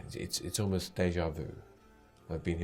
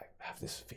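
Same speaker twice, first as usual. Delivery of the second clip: whispering, much quieter. Narrating a story scene, the speaker voices Alia speaking to the listener in a whisper. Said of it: "she whispers to you".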